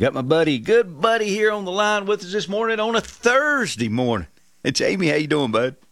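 hyped-up, revved-up, high-energy voice, pitched high. Opening the morning show and greeting a guest on the line: hyped up. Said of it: "You sound all hyped up this morning".

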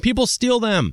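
loud yell. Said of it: "someone just yelled at me".

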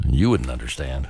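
low-pitched, dismissive, highly condescending tone. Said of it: "in our most condescending way".

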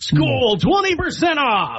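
high advertising announcer voice. Asked to give the pitch voice for a Skol discount; ad pitch voice. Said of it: "Give him the pitch voice for that".

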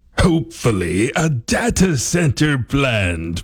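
fake theatrical reading. Reading a local online post aloud as a dramatic reading: mock dramatic reading. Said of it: "Our dramatic reading this morning".

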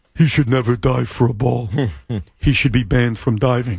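very low, level monotone drone. Speaker telling Sean what Ernie's point was, doing a low monotone Ernie imitation. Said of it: "I'll do an Ernie imitation in a very low monotone voice".

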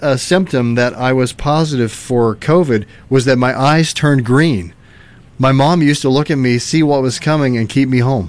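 plain

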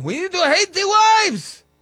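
mock rally shout, high and loud.

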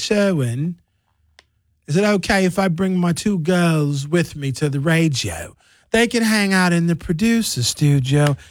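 put-on English accent. Quoting a woman who couldn't find a babysitter, in an English accent. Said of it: "she has an English accent. She's like".

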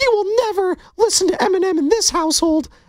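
squeaked out at very high pitch. Retelling what someone said at home, in a Mickey Mouse voice. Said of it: "I thought it was Mickey Mouse".

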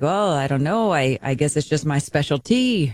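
fake Norwegian-accented speech. Retelling a football player's interview answer: imitating a norwegian accent. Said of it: "This is [name]'s Norwegian accent".

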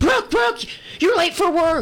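panicked, frantic calling voice.

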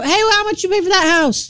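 high, loud mock yell. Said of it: "she just yelled from the side".

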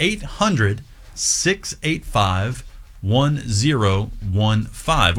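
slow, careful, deliberate reading, digit by digit. Fundraising host gives the pledge phone number: said slowly for the listener. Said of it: "I'm going to say it slow for you".

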